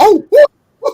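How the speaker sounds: very high, loud, belted outburst. Retelling his own reaction on the phone call: high Mickey Mouse voice.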